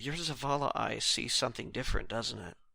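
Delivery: barely audible, faint, very quiet whisper. Whispering to Lita as Drop after rowing up beside her: whispering in character.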